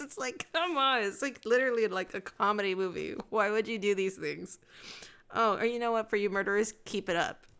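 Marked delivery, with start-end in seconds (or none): 0.0-4.6 speech broken up by laughter throughout. Speaker telling a murder case story to an audience, laughing while talking. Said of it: "I'm laughing".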